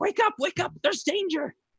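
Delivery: very high-pitched, urgent yelling. The narrator voices a player's cat familiar waking them, yelling urgently. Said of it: "starts yelling at you like".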